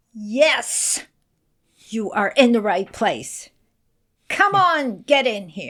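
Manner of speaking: mock firm, no-nonsense, very commanding tone. Retelling what the library director said at the door: imitating a very firm voice. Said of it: "said in a very firm voice".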